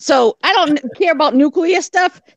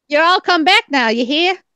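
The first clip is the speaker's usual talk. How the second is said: exaggerated put-on Southern accent. Mocking how TV people fake Southerners, in a fake Southern accent. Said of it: "that was my Texas voice".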